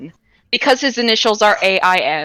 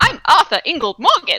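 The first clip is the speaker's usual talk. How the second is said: put-on high, old-timey 1920s newscaster voice; 8 semitones higher than usual. Introducing a player character by name: 1920s newscaster voice. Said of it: "I won't do that voice the whole time".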